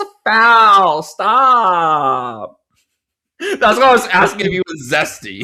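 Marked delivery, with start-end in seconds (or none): 0.0-2.6 very slow, high, loud, stretched-out complaining tone. Explaining why they asked, imitating how he talks. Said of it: "He goes like".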